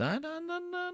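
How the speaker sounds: high, soft, glum and reluctant. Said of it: "You don't sound too happy about this".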